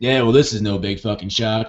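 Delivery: put-on punk rock, fed-up tone. Imitating a commentator the speaker loves: Scott Horton's punk rock tone. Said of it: "punk rock, like, fuck everything kind of, like, tone of voice".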